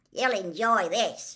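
gruffly spoken. Reading a story, voice Hagrid answering Madame Maxime gruffly. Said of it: "said Hagrid gruffly".

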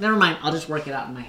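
put-on nerdy little kid voice. Retelling a comedian's imitation of his nerdy son waking up: imitating nerdy Damon Wayans Jr. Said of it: "he does a little imitation of him".

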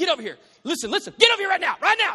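very loud, high, shrill angry scolding yelling. Imitating a parent calling their kid over: imitating an angry parent. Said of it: "Not like when you talk to your kid".

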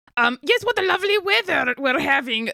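very loud voice. As a server arrives at the table, a player's character very loudly changes the subject. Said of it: "Sphinx very loudly goes".

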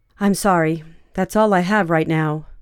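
usual speaking voice

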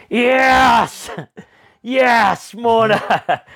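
put-on very high triumphant cheer, long drawn-out yes. Retelling shouting from behind a rider whose bike nearly went over, retelling a shout. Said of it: "And I shouted".

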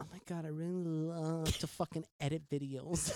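put-on Valley Girl accent and voice. Asked to describe their weekends in their best Valley Girl voice: Valley Girl voice. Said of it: "in your best Valley Girl voice".

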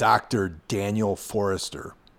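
plain

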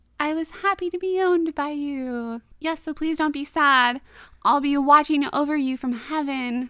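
put-on spooky ghost voice. Speaker retelling a man pretending to be her dog's ghost, in a mock-spooky ghost voice. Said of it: "trying to be all like spooky".

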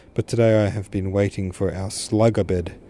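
plain reading voice

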